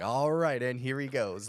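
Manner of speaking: booming, very loud, high play-by-play sports commentator voice. Imagining a spouse narrating everyday life: imitating a sports commentator. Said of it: "a sports commentator that is my wife in the background".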